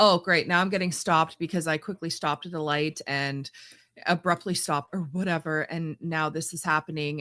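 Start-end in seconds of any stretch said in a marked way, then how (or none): none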